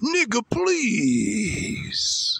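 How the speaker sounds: put-on high, swooping, taunting bully voice.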